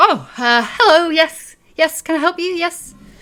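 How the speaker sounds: very high, very loud, flustered, fumbling voice. Voicing a barmaid who ducks under the bar to greet customers: flustered barmaid voice. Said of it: "ducks underneath the bar and comes over and is like".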